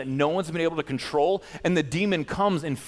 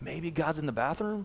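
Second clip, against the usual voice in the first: dry, mocking, sarcastic jab; 7 dB quieter than usual. Retelling Elijah taunting the prophets of Baal: imitating Elijah's sarcasm. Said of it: "he's got a good sarcastic wit to him".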